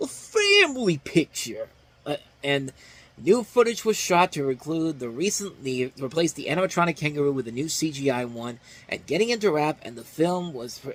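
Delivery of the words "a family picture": pitched very high with a swinging melody. Mocking a studio's change of marketing plans: Nostalgia Critic voice. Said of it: "nostalgia critic voice".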